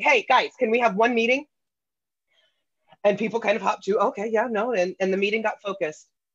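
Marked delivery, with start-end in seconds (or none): 0.0-1.4 play-acted hard, pushy, aggressive, demanding voice. Recalling a meeting that needed efficiency, retelling it in an aggressive voice. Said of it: "I maybe had my aggressive voice on".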